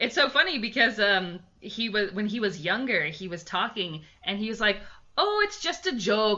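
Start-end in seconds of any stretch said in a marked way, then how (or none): 5.2-6.4 put-on Minnesotan accent, drawn-out long O, pitched up. Recalling what he said when he was younger, the speaker imitates a Minnesotan long O. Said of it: "and that long O sound".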